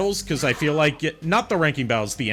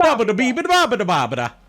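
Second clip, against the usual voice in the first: gibberish in fake Italian accent, much higher, louder; 10 semitones higher, 6 dB louder than usual. Performer saying nonsense words in a fake Italian accent. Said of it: "you say nonsense with a with an Italian accent".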